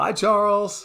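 high, loud, called-out voice.

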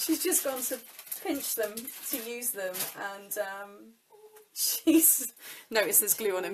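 speech broken up by chuckles. Reading messages aloud while talking, laughing while talking. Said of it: "I'm laughing and trying to read the messages".

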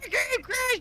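mild, high put-on yell.

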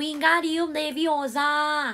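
put-on Thai accent. Reading a story aloud, answering a viewer's request, in a Thai accent. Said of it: "please say Wingardium Leviosa in a Thai accent".

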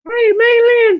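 loud, high-pitched squeak. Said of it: "He has a very high voice".

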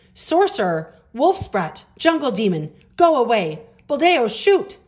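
high, rising, drawn-out shouting. Villagers waiting at the gate turn on the returning boy, shouting. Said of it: "the villagers shouted".

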